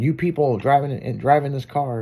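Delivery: plain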